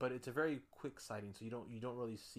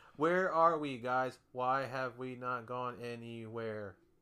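mock stiff robotic line reading, louder; 10 dB louder than usual. Imitating a bad actress's line reading: robotic imitation of Bianca's reading. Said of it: "very robotic".

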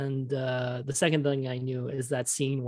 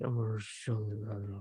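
soft half-whisper with lips barely moving; 3 semitones lower, 5 dB quieter than usual. Speaker describes a movie scene, doing a half-whispery Nicolas Cage impression. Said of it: "he's not even moving his lips".

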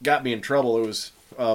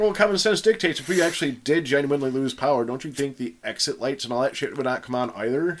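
ordinary talk, nothing marked

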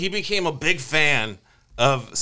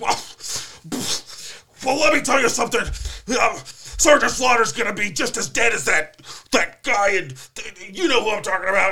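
high-pitched, flustered, tongue-tied stammering; 6 semitones higher than usual. Retelling a wrestling promo gone wrong, imitating Hulk Hogan stammering. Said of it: "he can't even talk".

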